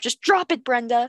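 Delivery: play-acted, firm, stern voice. Mocking dog owners scolding a dog named brenda, in a mock stern dog-training voice. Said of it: "their like stern training voice".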